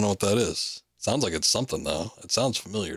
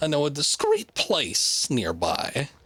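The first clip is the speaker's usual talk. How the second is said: high, swooping rat voice; 7 semitones higher than usual. Repeating another character's offer back, talking like a rat. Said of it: "I'm talking like a rat".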